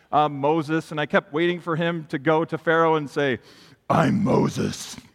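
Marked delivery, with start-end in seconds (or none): 3.8-4.9 rough, creaky superhero voice. Speaker to an audience, doing a Batman impression. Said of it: "That was my Batman impression".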